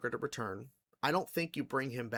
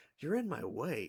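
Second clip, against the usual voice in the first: calm put-on villain voice, higher; 3 semitones higher than usual. Retelling a short scene where Joker blocks Batman: imitating Joker calmly. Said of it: "the way he goes very calmly".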